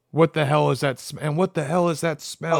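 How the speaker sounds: usual speaking voice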